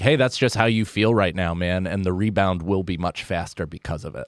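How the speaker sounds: ordinary talk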